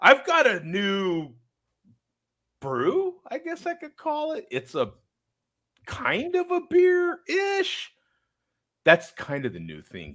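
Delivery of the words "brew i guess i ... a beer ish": very high, slow, out the side of the mouth. Showing viewers a new trendy way of talking about an uncertain thing, high pitch, out the side of mouth. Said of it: "you talk a little high pitch and out the side of your mouth".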